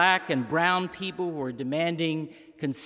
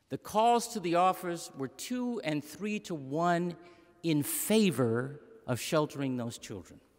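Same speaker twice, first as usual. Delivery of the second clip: ordinary talk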